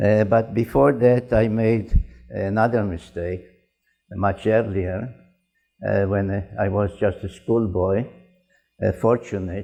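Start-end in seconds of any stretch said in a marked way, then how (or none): 8.9-9.6 strong stress placed on the word fortunate. Recalling studying the Bible as a schoolboy: stress on FORTUNATE. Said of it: "I am stressing the word fortunate".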